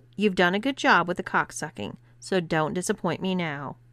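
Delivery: plain reading voice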